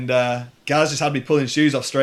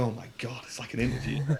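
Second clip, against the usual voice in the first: put-on nervous voice, quieter; 11 dB quieter than usual. Retelling going over nervously to ask for a job: imitating own nervous self. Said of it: "scuttled off all nervous".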